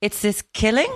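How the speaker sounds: questioning upward lilt on killing. Echoing the other speaker's upward inflection, rising question tone on killing. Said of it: "I like the way you just went up there".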